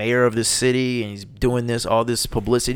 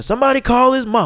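put-on screaming, higher and louder; 12 semitones higher, 6 dB louder than usual. Retelling screaming in the crowd after Pacquiao went down: retelling a scream. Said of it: "I just started screaming".

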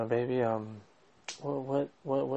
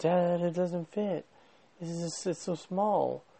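mock, high, drawn-out yell from afar; 5 semitones higher than usual. Retelling how the daughter called out from the fitting room: imitating someone yelling from afar. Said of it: "She yells out".

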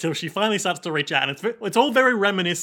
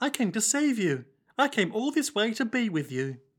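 put-on high, small, childlike little girl voice; 5 semitones higher, 4 dB quieter than usual. Acting out a child's lines from a coffin scene, in a little girl voice. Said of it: "That's my little girl voice".

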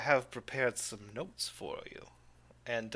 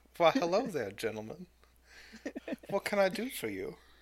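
put-on high, swooping Mississippi southern belle accent; 6 semitones higher than usual. The narrator voices the boss greeting the visiting gentlemen in a southern belle accent. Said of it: "I have to dredge up her accent now".

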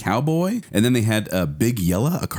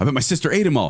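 put-on angry kid voice, higher; 4 semitones higher than usual. Acting out a kid whose cereal is gone: acting out a kid getting mad. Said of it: "And he's getting all mad".

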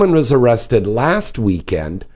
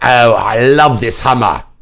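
put-on British accent; 4 dB louder than usual. Retelling what a man coming out of a pub said: British accent. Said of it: "so funny with a British accent".

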